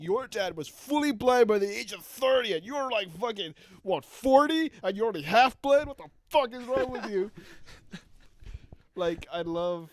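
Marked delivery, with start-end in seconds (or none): 0.0-7.3 mock very loud, high-pitched berating scream. Imagining a woman dissing a man, the speaker acts out her screaming. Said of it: "I like to imagine while she's screaming this at Demo Man".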